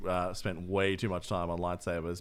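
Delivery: ordinary talk, nothing marked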